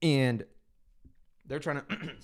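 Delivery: worn-out, failing voice giving out mid-phrase. A host talking mid-sentence, voice giving out. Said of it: "losing my voice".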